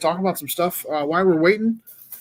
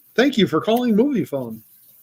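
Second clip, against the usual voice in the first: high, polished commercial announcer voice; 5 semitones higher than usual. Showing the others what their commercial voice sounds like, in a commercial voice. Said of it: "my commercial voice".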